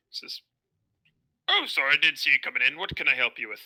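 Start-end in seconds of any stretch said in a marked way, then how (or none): 1.4-3.6 put-on aged dwarf character voice. Voicing an old dwarf shopkeeper greeting customers: old dwarf shopkeeper voice. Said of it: "you see a old-looking dwarf sitting at the counter".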